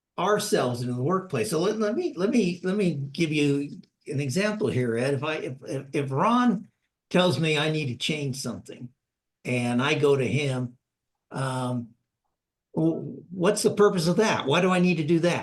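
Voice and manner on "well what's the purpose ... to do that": defensive, negative, resistant tone, rising slightly. Giving Ed an example, the speaker acts out pushing back on Ron: rising pushback tone. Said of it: "the way my voice rose a little bit".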